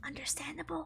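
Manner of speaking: whispering. Responding to a viewer who got bored of the show: whispering. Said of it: "I say in a whisper".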